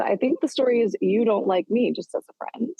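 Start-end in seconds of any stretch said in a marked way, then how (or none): none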